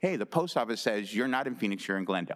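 ordinary talk

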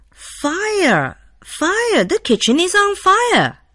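very high, loud, excited cry of alarm. Reading a story aloud, a servant boy rushes into his master's room, shouting loudly and excited. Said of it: "The boy shouted loudly in an excited voice".

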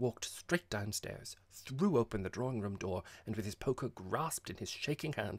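ordinary delivery

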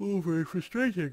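loud, high-pitched words spoken through a yawn. Explaining unhappy pops in a game, said through a yawn. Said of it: "He says through a yawn".

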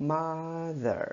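first syllable of mother stressed. Pronunciation lesson in Vietnamese, saying mother with stress on first syllable. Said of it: "các bạn đọc cái âm ma cao hơn, nặng hơn".

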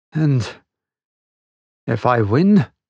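husky, hoarse voice. Narrator reads a character's reply to the general, husky. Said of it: "began Rainsford huskily".

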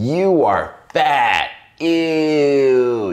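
put-on very slow, loud contempt, "ew" dragged out. Quoting what people usually say to someone, mock-disdainful. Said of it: "You can almost hear the sound of the disdain in my voice when I say it".

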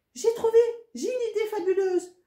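delighted, very high-pitched happy cry. After a moment's thought about a friend's problem, he speaks, exclaiming happily. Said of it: "il s'exclama tout heureux".

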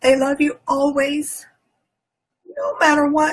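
crying through the words, tearful and high. Retelling words someone once said to her that she will never forget, crying. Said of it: "I'm sorry, I'm crying".

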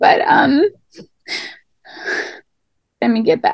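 getting a little emotional, choked-up, tearful pause.

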